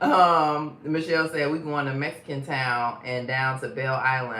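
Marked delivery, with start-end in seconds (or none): none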